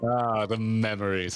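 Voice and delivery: put-on, low, dreamy, sultry seductive voice. Voicing a game character's lines: dreamy seductive Thancred voice. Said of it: "doing a dreamy voice for Thancred".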